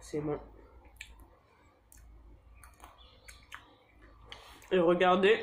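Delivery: speaking while chewing, mouth full of food. Showing viewers the final result, talking with mouth full. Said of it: "c'est mal poli de parler la bouche pleine".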